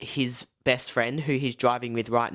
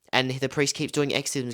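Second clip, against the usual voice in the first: usual speaking voice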